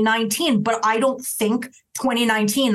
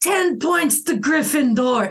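put-on tipsy drunk voice, slow delivery; 4 semitones higher than usual. Acting out a drunk stumbling onto a pile of coats: drunk. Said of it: "and clearly drunk".

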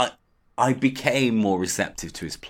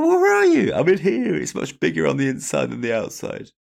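creaky voice echoing as if from inside; 8 semitones higher, 5 dB louder than usual. Retelling a story about Dave being inside somewhere, speaking in an echoey voice. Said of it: "Echoey voice".

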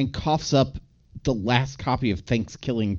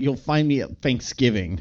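ordinary delivery

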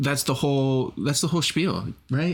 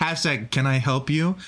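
flat, friendly but lifeless customer service voice. Going through contestants' hashtag answers, doing a customer service voice. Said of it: "your customer service voice".

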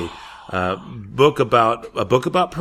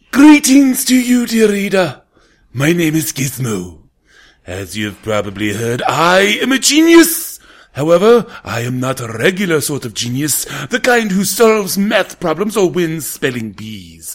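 put-on evil genius voice, higher and louder; 5 semitones higher, 7 dB louder than usual. Reading the opening chapter as the evil genius guinea pig: evil genius guinea pig voice. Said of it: "he sounds a little bit of something like this".

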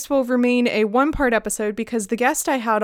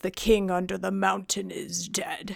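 low, hushed, creaky dragon voice; 5 semitones lower, 8 dB quieter than usual. Previewing the story's next part, the speaker reads a dragon's line as a Smaug impression. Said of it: "Do you guys like my Smaug impression?".

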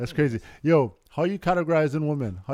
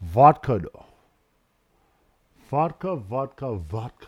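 fake Russian accent, much slower; 2 semitones lower than usual. Talking about a palate for different spirits, mock Russian accent. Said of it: "You're trying to be Russian right now".

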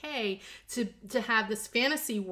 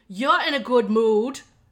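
put-on Japanese-English accent; 10 dB louder than usual. Retelling what a mother said in the kitchen: imitating mother's Jinglish accent. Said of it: "she just said in her little, you know, Jinglish".

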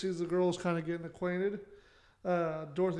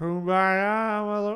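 put-on loud drunken slur, Kumbaya stretched out; 3 semitones higher, 7 dB louder than usual. Acting out a character's line while discussing how a role should sound, as if drunk. Slurred voice. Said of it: "it's like almost a slurred voice".

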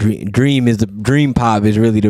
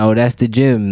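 usual speaking voice

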